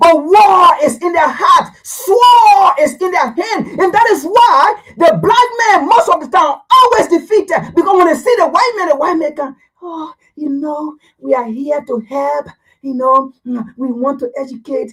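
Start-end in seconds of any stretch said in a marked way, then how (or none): 9.8-14.9 soft, thin, oily-smooth, buttery voice. Mocking how a visitor speaks in a soft tone: imitating a soft-toned voice. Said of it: "Their voice may be soft like butter".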